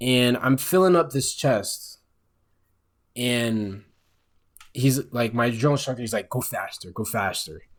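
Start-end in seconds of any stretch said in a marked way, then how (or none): 6.3-7.6 soft, little frog voice. Quoting a drill instructor at the ice chest, in a little frog voice. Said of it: "in that little frog voice".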